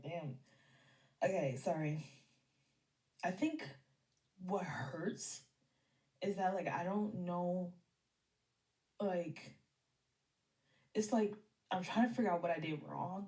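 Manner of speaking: talking while sobbing hard, tearful. Talking to viewers about being hurt, crying. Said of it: "I'm freaking crying too hard".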